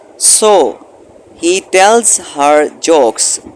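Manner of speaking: short pause after the word so. English lesson, comma after the first word: short pause after so. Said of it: "सो के बाद coma जो आ गया है वहाँ पे थोड़ा सा वक्फा करेंगे".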